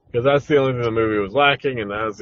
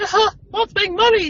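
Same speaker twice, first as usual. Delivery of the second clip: very high, squeaky voice; 3 dB louder than usual. Explaining Disney buying Star Wars, speaking as the little mouse, Mickey Mouse voice. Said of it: "the little mouse was like".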